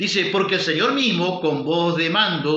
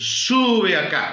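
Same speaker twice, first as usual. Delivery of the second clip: put-on commanding, authoritative voice. Preacher quoting the Lord's call to the church, retelling a commanding order. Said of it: "Con voz de mando".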